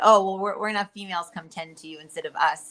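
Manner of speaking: ordinary talk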